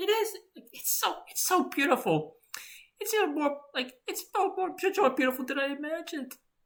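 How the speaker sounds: put-on teary voice. Playing a scene at the beach with ma, acting teary. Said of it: "Howard, don't cry".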